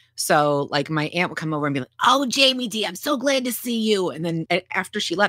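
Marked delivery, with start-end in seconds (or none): 2.1-4.1 put-on very high, slow, drawn-out New York accent. Recalling an aunt from New York arriving for a visit, imitating her New York accent. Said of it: "I would be doing her voice all day".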